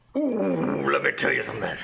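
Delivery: gravelly, swooping hype voice. Saying a line after another speaker asks for it: Macho Man Randy Savage voice. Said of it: "you gotta say that like, uh, Macho Man Randy Savage".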